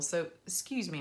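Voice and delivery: ordinary talk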